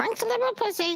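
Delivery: very high, parrot-like talking voice. Showing off a pirate costume's talking parrot: talking parrot voice. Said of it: "The parrot talks".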